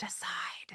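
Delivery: soft, unvoiced whisper.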